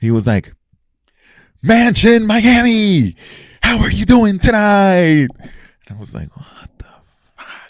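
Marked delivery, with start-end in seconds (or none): 1.6-5.3 very high, weird, hyped club announcer voice. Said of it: "this fucking weird announcer".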